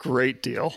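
heavily sarcastic delivery. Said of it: "I say that with a heavy dose of sarcasm".

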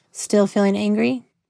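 plain reading voice

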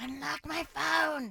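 little creature voice, fixated, obsessed, craving. Imitating people desperate to get their phones unlocked: Gollum voice.

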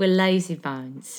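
put-on British accent. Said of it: "Just pronounce it in a British accent".

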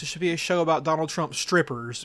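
ordinary talk

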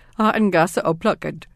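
normal talking voice

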